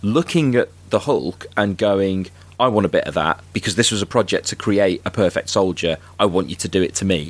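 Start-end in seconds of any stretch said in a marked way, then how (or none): none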